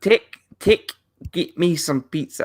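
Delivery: clumsy, bad fake New Zealand accent. Trying out how to say pizza in a New Zealand accent, bad New Zealand accent. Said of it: "how to say pizza in a New Zealand accent".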